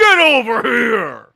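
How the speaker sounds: put-on high, loud arcade battle cry. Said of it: "wraps around someone and goes".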